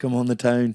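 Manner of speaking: Irish accent from Dundalk. Repeating a Dundalk phrase after a local: Dundalk Irish accent. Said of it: "you could be from Dundalk, say it again".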